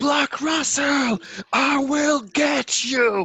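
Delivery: high, drawn-out, bellowing full-lung yell. In character, drawing an axe and going after enemies, yelling at full lung power. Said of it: "I yell on the power of my lungs".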